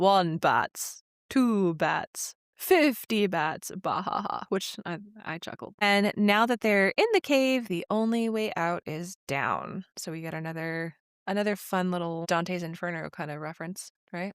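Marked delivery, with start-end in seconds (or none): 0.0-4.4 very slow puppet vampire voice, then laughing. Recapping a scene where a character counts bats, doing the Count from Sesame Street voice. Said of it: "she does the voice of Count from Sesame Street".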